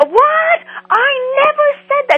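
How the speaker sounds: very high, wild, unhinged screaming. Retelling how a man got up at what a police officer said on television, imitating a man's scream. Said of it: "he got up and screamed".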